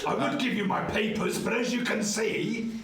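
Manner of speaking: bluffing with showy bravado.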